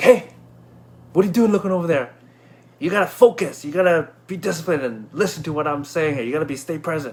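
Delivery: acted, lecturing, scolding voice, yelled. Retelling how the instructor yelled about not focusing: imitating the instructor yelling. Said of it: "he yelled at me".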